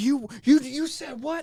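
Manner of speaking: shrill, in-your-face scream, very high and loud. Retelling an angry man's reply while in a clown costume: imitating someone screaming. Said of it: "he starts screaming at me".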